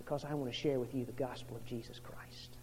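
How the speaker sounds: soft, low, tender whisper.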